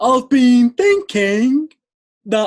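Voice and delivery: high, very slow, loud robotic drone. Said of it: "that's how he talks ... he sounds like a robot".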